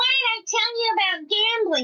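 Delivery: put-on voice, pitched very high. Retelling a movie moment that a partner walked in on, in a really high-pitched Fran Drescher voice. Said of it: "in her like really high pitched voice".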